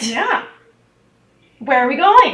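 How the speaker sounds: lively, innocent, naive, energetic eagerness. Playing a character in an actual play, naive and energetic. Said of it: "she's naive and energetic, / she's naive and energetic, not insane. / she's. / she's naive and energetic".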